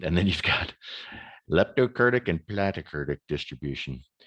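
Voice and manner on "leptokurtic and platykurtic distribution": campy movie villain voice. Speaker explains a statistics graphic, saying the distribution names in a Doctor Evil impression. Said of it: "without bringing out my Doctor Evil impression".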